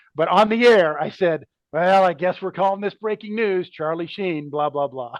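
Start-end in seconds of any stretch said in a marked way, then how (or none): 1.7-5.2 play-acted, grudging, sarcastic tone. Retelling own on-air reading of a breaking news script: retelling a sarcastic remark. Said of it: "I was kinda sarcastically".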